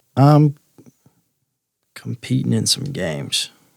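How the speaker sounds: discreet, confidential, confiding delivery. Speaking to the bartender across the bar, in a lowered voice. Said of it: "then I'll lower my voice a little bit".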